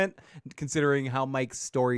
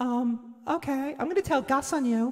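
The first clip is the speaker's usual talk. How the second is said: put-on girl voice, higher pitch; 11 semitones higher than usual. Acting out a scene as Lydia: Lydia in a random girl voice. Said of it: "I'm just sort of like a random girl voice".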